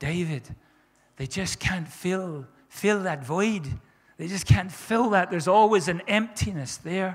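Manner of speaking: put-on speaking in a lovely Irish accent. Quoting a woman from the addiction community, in her irish accent. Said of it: "in her lovely irish accent".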